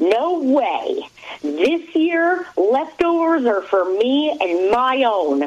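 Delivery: put-on scream kept small, high and drawn-out. Retelling the aunt, who was hosting, answering her in the kitchen; retelling the aunt's scream. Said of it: "She looks at me and screams".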